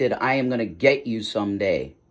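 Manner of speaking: calm, cold, cool, collected, composed. Describing two anger modes and showing the quiet one: calm, cold, collected. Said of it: "calm, cold, collected".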